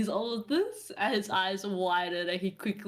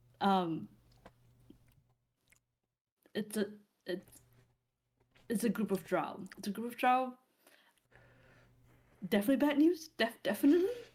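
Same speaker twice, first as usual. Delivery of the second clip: put-on hushed voice. A storyteller acts out a character hurrying back with bad news; retelling in a hushed voice. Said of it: "in a hushed voice".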